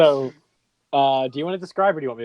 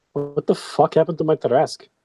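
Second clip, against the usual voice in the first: huge, booming, resounding voice; 3 semitones higher than usual. Game narrator voicing a voice heard across the entire city, booming. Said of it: "you just hear a booming voice come through".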